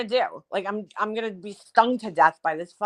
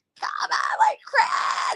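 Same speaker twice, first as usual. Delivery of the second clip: very slow, stretched-out screaming call. Retelling how nobody heard them calling for their son, screaming. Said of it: "I'm like screaming my head off".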